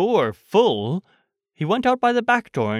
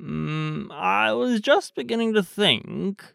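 slow, sniffling a little between words; 3 semitones higher than usual. The bear answers his friend, sniffing slightly. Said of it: "sniffing slightly".

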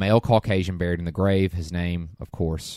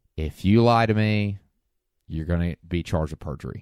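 plain, straight, matter-of-fact delivery. Retelling Scully's warning to Tessa about lying: imitating Scully's slow monotone. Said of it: "Scully just says in a very monotone, just slow way".

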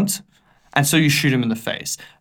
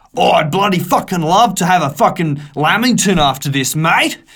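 put-on annoying, obnoxious, grating Australian accent voice; 3 semitones higher, 4 dB louder than usual. Mocking how an annoying Australian character talks: annoying Australian character voice. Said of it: "annoying Australian character".

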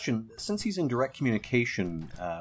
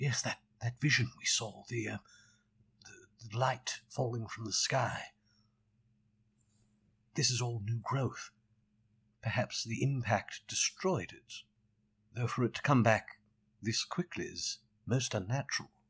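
soft, hushed half-whisper; 5 dB quieter than usual. Speaking in character only to those closest to them, half-whispering. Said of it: "I'll whisper that".

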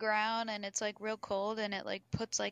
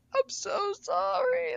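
put-on tearful voice, higher and louder; 5 dB louder than usual. Retelling how a driver apologized at the door after hitting the car: imitating someone crying. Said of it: "he's crying".

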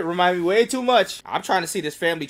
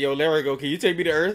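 normal talking voice

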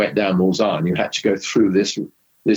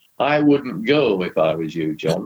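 plain northern English delivery. Telling a Le Mans story, the speaker quotes Keith Duckworth in his northern accent. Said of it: "with his northern accent".

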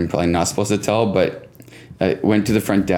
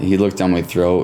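plain

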